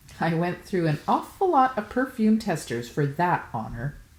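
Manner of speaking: usual speaking voice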